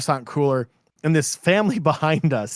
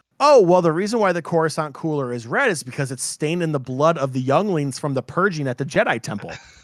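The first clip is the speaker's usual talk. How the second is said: normal talking voice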